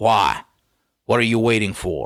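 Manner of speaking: sternest possible, severe tone. Urging listeners who haven't read a book yet: very stern question. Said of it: "with the sternest voice I can".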